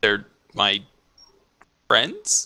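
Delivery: puzzled, confused, swooping lilt on "my friends". Answering another character in a game scene, confused intonation. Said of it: "He seems kinda confused about the last part".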